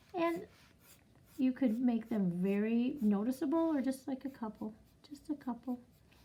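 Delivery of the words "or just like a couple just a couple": quiet, little, hushed half-whisper. Explaining how to draw eyelashes on an eye: half-whispering. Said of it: "I'm whispering because they're so quiet".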